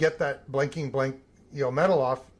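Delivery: ordinary delivery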